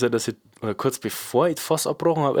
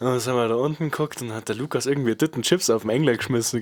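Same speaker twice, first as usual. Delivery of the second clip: ordinary talk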